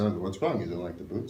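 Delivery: terrible, clumsy put-on Armenian accent. Retelling a bootmaker's question about the boots: terrible Armenian accent impression. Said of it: "my terrible impersonation".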